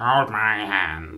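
scary, creepy talking-doll voice. Asked to imitate how a scary doll might sound: scary doll voice. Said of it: "Can you do an impression of what you think they will sound like?".

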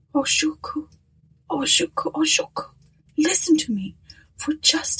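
pleading. A man, his hand on a sobbing woman's shoulder, pleads with her.

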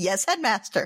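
plain

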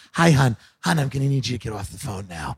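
low, unhinged, insane-sounding flight attendant voice. Mocking american flight attendants who have gone insane: imitating an insane flight attendant. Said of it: "They're all like this with the eyes like".

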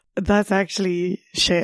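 ordinary talk, nothing marked

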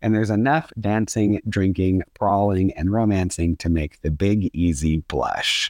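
plain

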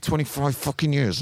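quiet angry outburst. Retelling a complaint to a waiter: imitating a quiet angry outburst. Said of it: "I kicked off, but quietly".

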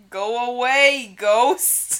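put-on bellowing loudly in a Brooklyn accent. Repeating Al Capone's reply to a ghost after admitting it isn't Chicago, Al Capone voice with Brooklyn accent. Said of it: "that's what Brooklyn sounds like".

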